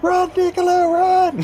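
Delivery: very high, loud, shrill yowling cat voice. A distant shout reaches Niccolo, in Raven's yowling cat voice. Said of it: "In a yowling cat voice".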